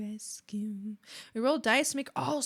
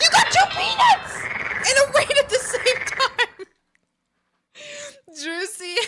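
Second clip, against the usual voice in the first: very high, very loud, shrill ecstatic shriek; 13 semitones higher, 10 dB louder than usual. Reacting live to a rare moment, the speaker is excited screaming. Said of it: "I'm sorry I'm screaming".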